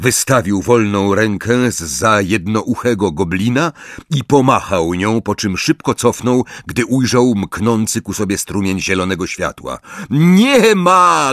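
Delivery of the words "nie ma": loud, yelled-out shouting. A man hiding behind a goblin shouts to a woman attacking him: shouting. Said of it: "Krzyknął".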